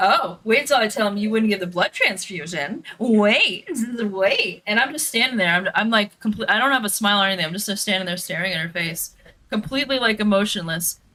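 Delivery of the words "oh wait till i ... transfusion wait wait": acted-out slow, belittling, patronizing tone. Telling a story, imitating a woman's condescending taunt. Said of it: "she's like so condescending".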